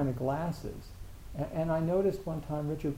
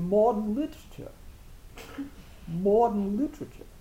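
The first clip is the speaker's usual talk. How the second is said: put-on Maine-style New England accent on the word modern; 6 semitones higher, 5 dB louder than usual. Recalling how a man from Maine said a phrase, in a New England accent. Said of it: "this incredible New England accent".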